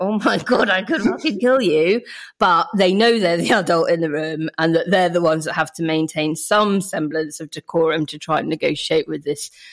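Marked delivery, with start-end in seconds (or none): 0.0-2.0 put-on clenched-teeth speech, much higher. Describing a frustrated adult with a child refusing to dress: acted through gritted teeth. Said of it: "through gritted teeth going".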